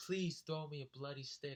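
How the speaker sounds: begging, mild, pleading, half-shouted yell. Speaker retelling begging Mike to throw a stick, retelling a scream. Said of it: "I'm screaming, I'm screaming".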